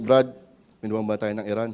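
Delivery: very calm, perfectly composed, soft voice. Retelling how Brother Ray said it: imitating Brother Ray, very calm. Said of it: "napakalma po ni Brother Ray, ... He say it like this".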